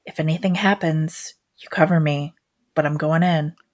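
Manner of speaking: hushed, whispered voice. Telling a partner hiding nearby before sneaking in: whispering. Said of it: "I'm just gonna whisper".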